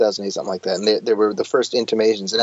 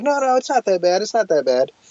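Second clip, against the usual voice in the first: much higher, strained, forced delivery. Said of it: "your voice gets higher pitched as you try to just".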